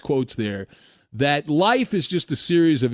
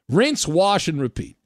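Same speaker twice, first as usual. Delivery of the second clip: ordinary talk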